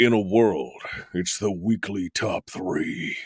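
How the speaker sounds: slow, deep movie-trailer announcer voice. Radio host opening the weekly top three segment, in a deep movie trailer voice. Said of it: "I could do movie trailers this morning".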